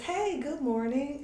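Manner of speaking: acted sugary, very high-pitched, sweet little voice. Retelling answering a morning phone call, in a put-on sweet little voice. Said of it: "I put on my little sweet voice".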